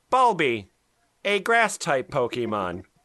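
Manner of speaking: showy, put-on announcer-style narrator voice. Reading a Pokemon entry aloud as requested, in a Pokesex narrator voice. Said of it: "So this is going to be my best Pokesex voice".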